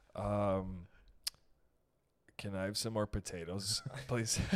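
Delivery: nervous, freaked-out, very slow, drawn-out voice. Retelling what a friend said at the dinner table: imitating a freaked-out friend. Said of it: "so freaked out".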